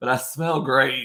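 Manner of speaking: slow, dry, sarcastic drawl. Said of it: "I'm being sar-, uh, sarcastic".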